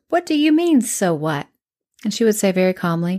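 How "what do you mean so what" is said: put-on snippy, sassy, high-pitched teenager voice. Retelling a reply to a counselor: imitating her sassy teenage self. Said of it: "imagine my sassy teenage way".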